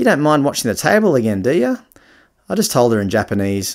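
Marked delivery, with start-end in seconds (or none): 0.0-1.8 put-on broad, thick Australian accent, pitched up. Retelling a girl asking him to watch the table again: thick Aussie accent. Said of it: "in a thick Aussie accent again".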